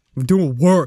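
throat-straining gangsta tone. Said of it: "that hurt my throat really badly".

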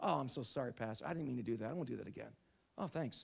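casual, breezy, careless throwaway tone. Acting out someone who slaps the pastor, then apologizing: careless apology. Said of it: "imagine if someone says to me".

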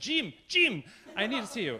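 put-on wonderful Spanish accent, loud calling out. Retell how a man would call to you down the hall at MSM, in Solomon's wonderful Spanish accent. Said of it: "in this wonderful Spanish accent".

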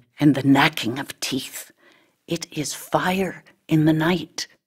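ordinary talk

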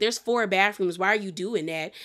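ordinary delivery

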